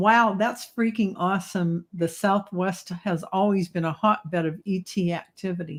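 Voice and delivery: ordinary talk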